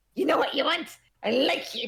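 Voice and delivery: tiny, high, little goblin-like creature voice. Voicing a kobold waiter taking an order: kobold voice. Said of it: "the kobold immediately, like, gasps and stares at you".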